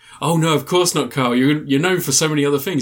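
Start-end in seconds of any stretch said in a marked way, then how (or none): none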